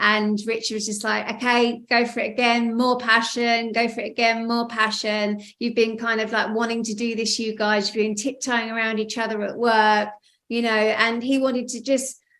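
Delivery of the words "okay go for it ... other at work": ordinary talk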